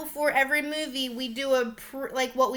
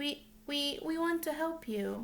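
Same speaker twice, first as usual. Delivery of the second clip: stoic, creepy delivery; 9 dB quieter than usual. Imitating a creepy movie character's line: monotone Jessica Chastain imitation. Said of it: "monotoned, no facial expressions whatsoever".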